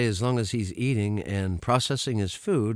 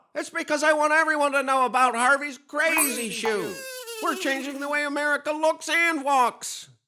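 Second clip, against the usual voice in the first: yelling at full volume. A radio ad for Harvey's Crazy Shoe, the announcer yelling. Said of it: "why I'm yelling so loud".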